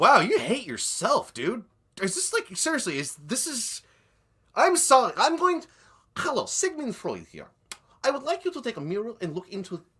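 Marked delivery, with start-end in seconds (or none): 6.2-9.7 put-on Russian accent, pitched higher. Posing as Sigmund Freud to lecture the other speaker: Sigmund Freud voice, Russian accent. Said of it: "Why is he Russian?".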